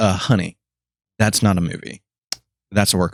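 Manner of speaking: put-on, super sassy retort. Speaker retells what she said to stop him, mock-sassy remark. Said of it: "super sassy and super".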